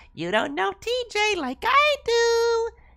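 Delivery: very high, loud, pushy, coaxing wheedling. Narrating a story, voicing a raccoon on two legs asking to come in. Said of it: "and the other a raccoon standing on two legs. / he added".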